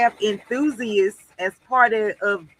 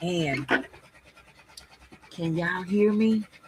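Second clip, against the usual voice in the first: whispering, quieter and slower; 3 semitones lower, 4 dB quieter than usual. Asking viewers in the chat whether they can hear; whispering. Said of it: "because I'm trying to whisper".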